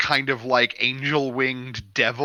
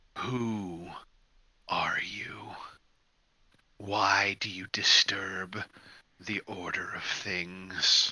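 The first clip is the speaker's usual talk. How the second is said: very slow, creeping voice; 6 semitones lower, 9 dB quieter than usual. Voicing a creature pressing into a player's mind: creeping voice in your head. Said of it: "there's this voice creeping at the back of your neck".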